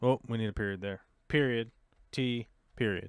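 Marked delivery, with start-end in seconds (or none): 1.3-3.1 unhurried, slow, deliberate, carefully spelled out. Reading out a text so everybody can hear, saying it nice and slow. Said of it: "saying that nice and slow".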